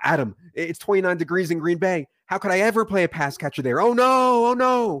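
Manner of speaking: mock very high, frantic, panicky fretting. Imitating fantasy football players asking about weather: imitating panicked fantasy players. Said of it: "the panic is unbelievable".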